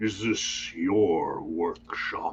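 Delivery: deep primordial voice. Narrator voices an unseen speaker from across the room, deeper voice. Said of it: "you hear a deeper voice".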